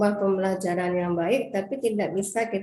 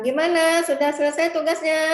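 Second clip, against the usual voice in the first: pitch lifted slightly higher; 8 semitones higher, 4 dB louder than usual. Critiquing flat delivery, example question about the task: slightly raised pitch. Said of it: "itu kan kita agak tinggi ya".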